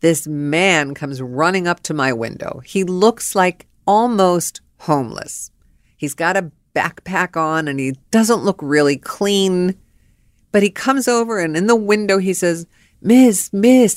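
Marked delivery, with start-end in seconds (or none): 13.0-14.0 put-on Cuban accent, raised and pitched up. Retelling a stranger calling out at the speaker's window, imitating a Cuban accent. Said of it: "and he's Cuban. And so he's got the accent".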